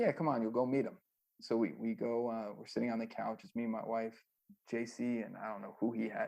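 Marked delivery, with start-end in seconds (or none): none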